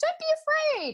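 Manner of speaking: very high-pitched, pitchy woman's voice. Retelling a voice heard while walking back toward the light, very high-pitched woman's voice. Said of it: "like this really pitchy voice".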